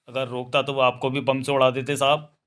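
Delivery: ordinary delivery, nothing marked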